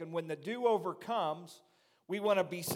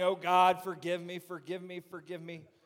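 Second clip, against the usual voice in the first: mock tearful pleading, imitated crying. Picturing someone at the altar pounding a fist, imitating someone crying. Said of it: "someone at the altar crying".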